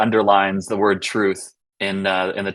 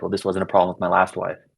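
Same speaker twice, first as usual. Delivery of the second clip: muttered under the breath, quieter; 4 dB quieter than usual. Retelling a character's line from a film scene, imitating a line muttered under the breath. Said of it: "under his breath".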